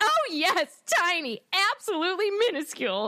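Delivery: very high, swooping hysterical sarcasm. Retelling a scene where Hermione answers the claim, mock-hysterical sarcastic Hermione. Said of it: "in a kind of like hysterical, sarcastic".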